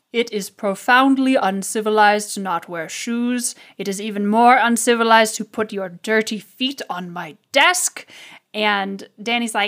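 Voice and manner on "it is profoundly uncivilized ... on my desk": heavy sigh, disgusted, exasperated orc shopkeeper voice. Voicing an orc artificer scolding a character on his desk: heavy sigh, disgusted orc artificer. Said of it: "he sighs really heavily and says".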